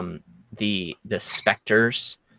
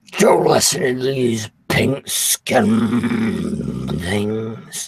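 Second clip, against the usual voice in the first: very irritated, exasperated tone. A game master voices a bugbear addressing a goblin, in a very irritated tone. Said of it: "a very irritated tone".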